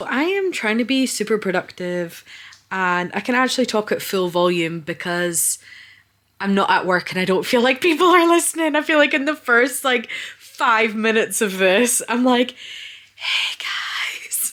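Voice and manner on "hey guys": fake, really soft voice, much quieter. Recalling the first minutes of this recording, the speaker does a fake, really soft voice. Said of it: "Using some fake, really soft voice".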